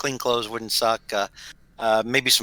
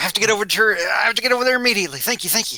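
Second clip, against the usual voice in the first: put-on character voice, higher pitch; 9 semitones higher than usual. Voicing Thorny Mick replying to a sending spell: Thorny Mick voice. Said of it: "and Thorny Mick's like".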